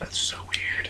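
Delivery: very quiet, hushed whisper. Reacting to the other speaker's odd confession: whispering. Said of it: "I don't know why we're whispering".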